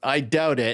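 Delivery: ordinary talk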